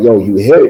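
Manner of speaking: normal talking voice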